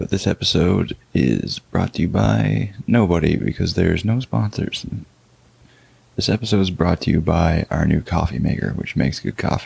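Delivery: speaking in a whisper. Early in the morning, the podcast host whispers so as not to wake anyone. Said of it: "I'm kind of whispering".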